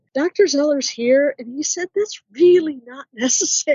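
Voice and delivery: mock sheepish little voice. Retelling what a medium said about a doctor: imitating an embarrassed little voice. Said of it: "in kind of an embarrassed little voice".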